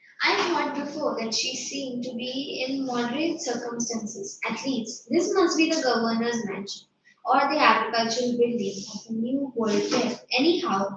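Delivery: ordinary talk, nothing marked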